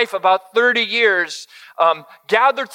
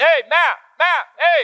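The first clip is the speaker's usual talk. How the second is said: dad voice, much higher and slower, preaching; 6 semitones higher than usual. Retelling calling out down the beach, the speaker uses a calling-out dad voice. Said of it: "Can you tell I got that dad voice?".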